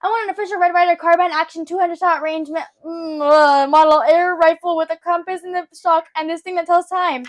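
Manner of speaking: blurting in a rush. Retelling a movie scene where a kid tells Santa his wish: blurting out a request in a rush. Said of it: "blurts out right past".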